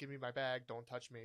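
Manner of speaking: ordinary talk, nothing marked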